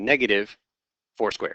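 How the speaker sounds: clear pause after "negative", then "four". Walking through a math expression aloud, pause after negative. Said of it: "so listen to the pause here".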